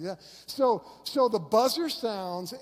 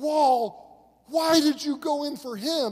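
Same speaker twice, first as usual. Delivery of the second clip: acted-out coach's yell, slow, raised, high; 7 semitones higher, 5 dB louder than usual. Retelling how the coach reacted across the gym: imitating a coach yelling. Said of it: "I hear him yelling through the entire gym".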